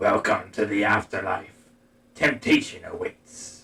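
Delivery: deep, raspy, intoned delivery. Narrating the game, the farrier welcomes the players ashore, in a deep, raspy voice. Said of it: "in a deep, raspy voice".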